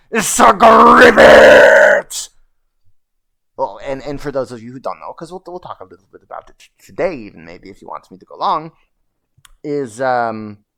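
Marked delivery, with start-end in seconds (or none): 0.1-2.3 very loud, raw, shrill, full-throated scream. Retelling getting angry during a trial: imitating own past scream. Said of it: "And so I screamed".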